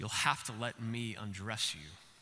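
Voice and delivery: deep voice from the very bottom. Retelling how Aslan speaks to the exhausted dragon Eustace: strong, deep Aslan voice. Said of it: "Aslan says in a really strong, deep voice".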